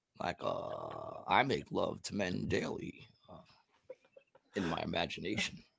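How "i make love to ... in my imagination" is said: mock smooth, easy, smooth-talking delivery. Imitating how someone probably said a line from a letter: imitating a smooth delivery. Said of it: "He probably said it real smooth".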